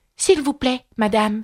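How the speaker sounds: rather timid, somewhat shy. Narrator voicing a character speaking first to the cook, rather timid. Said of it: "demanda Alice assez timidement".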